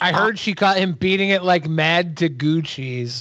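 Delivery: plain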